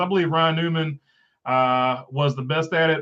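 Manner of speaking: ordinary talk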